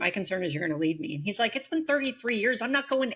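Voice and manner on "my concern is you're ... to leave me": normal talking voice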